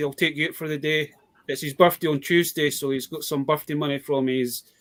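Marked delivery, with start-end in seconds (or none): none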